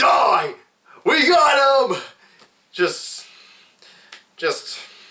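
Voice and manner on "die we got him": intense yell, very high, very slow, drawn out. Describing the actor trying to kill the leprechaun in a funny scene: imitating Nathan's intense shouting. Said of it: "he really gets intense".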